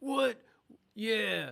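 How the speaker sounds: very loud, rough, high, raw belted shout. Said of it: "That's my [name] impression".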